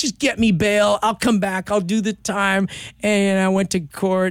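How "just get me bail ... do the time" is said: put-on tearful crying, higher. Retelling a desperate plea to god for bail: retelling a tearful plea. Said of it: "letting it all out, crying".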